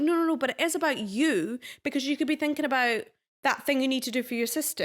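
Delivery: ordinary talk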